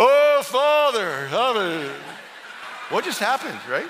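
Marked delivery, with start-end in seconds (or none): 0.0-1.9 loud, formal, churchy put-on prayer voice. Showing how people change their voice when they start to pray: imitating a changed prayer voice. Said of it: "change my voice".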